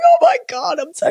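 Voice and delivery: weepy, swooping, teary, proud gushing auntie voice. Joking about being proud of the performers, as a tipsy auntie: mock tearful auntie. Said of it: "like your auntie having a cry in the corner".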